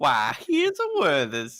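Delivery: put-on Southern accent, slow, lilting and swooping. Speaking as the character after being told to add one: southern accent. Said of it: "You can add one now".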